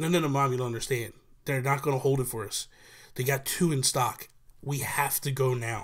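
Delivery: ordinary delivery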